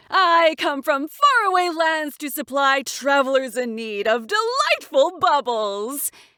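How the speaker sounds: over-the-top, ridiculously cheerful, proclaiming voice. Reading a story, a peddler greets travelers: ridiculously cheerful voice. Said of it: "In a ridiculously cheerful voice".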